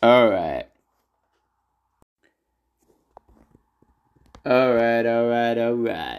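clumsy put-on Texan drawl. Doing a self-admittedly bad Matthew McConaughey impression. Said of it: "that's my best Matthew McConaughey".

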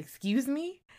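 high, affronted, indignant tone. Recounting a reaction to a man mentioning his mistress, retelling an indignant reply. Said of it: "This was not what I wanted to hear".

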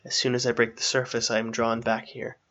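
ordinary talk

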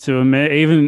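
sarcastic, praise laid on thick and exaggerated.

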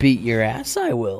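put-on bad, unconvincing attempt at a wise old master voice. Taking turns with others saying lines in a voice; failed Yoda impression. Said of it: "He doesn't even sound like Yoda".

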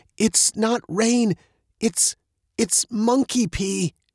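aghast, horrified, very high-pitched and drawn out. Looking up as drops fall on them, a girl tells her friend, horrified. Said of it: "Veronica looked up, horrified".

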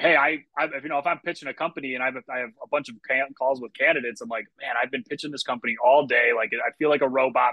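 ordinary delivery

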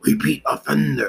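brief demonic-sounding voice. Speaker calls a tv character a repeat offender: sounding like a demon. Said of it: "I sound like a demon for a moment".

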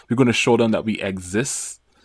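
ordinary talk

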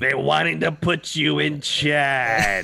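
loud, very slow, drawn-out character voice. Answering a remark that the speaker sounds like Roz: Roz from Monsters, Inc. voice. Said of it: "that's where my line's from, is Monsters, Inc series".

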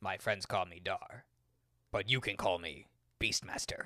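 cool, heroic fantasy hero voice. Asking to say the line from the bandit scene: Dar voice impression. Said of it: "That's actually a pretty good Dar voice impression".

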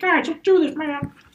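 squeaky, very high cartoon puppet frog voice. Describing a quarterback cheering on teammates, doing a Kermit the Frog voice. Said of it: "he sounds like Kermit the Frog".

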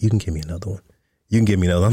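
acted whispering voice. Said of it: "she's whispering in my ear".

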